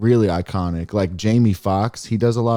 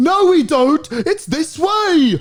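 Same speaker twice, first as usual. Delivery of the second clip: put-on British TV host voice, higher pitched; 4 dB louder than usual. Listing show hosts' mannerisms, doing a John Oliver impression. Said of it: "So John Oliver, he's got the".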